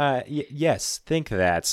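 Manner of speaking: put-on smug tone. Retelling a card game, the speaker replays his answer to his opponent, retelling a smug reply. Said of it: "i say smugly".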